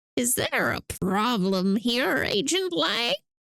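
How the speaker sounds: put-on voice of an old man. Playing a scene, the speaker voices a character questioning Agent Lang in an old man voice. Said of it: "old man voice".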